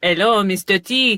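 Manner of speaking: clumsy, really bad fake French accent. Quoting how someone greets him, in a really bad French accent. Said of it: "this is me doing a really bad French accent".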